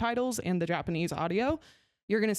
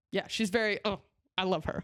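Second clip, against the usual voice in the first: ordinary delivery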